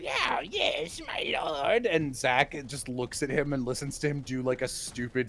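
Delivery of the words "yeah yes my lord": very high, very slow, rasping, creaky gremlin voice. Retelling a clip of a player voicing a little gremlin: imitating Brennan as a gremlin. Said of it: "Brennan playing a little fucking gremlin and being like".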